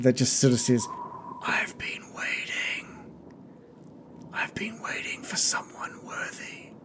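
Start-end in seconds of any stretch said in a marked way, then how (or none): 1.4-6.7 hushed, slow, eerie whisper. Voicing a presence that speaks inside a player's mind: eerie whispering voice. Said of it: "you hear a whispering just in, in the back of your mind".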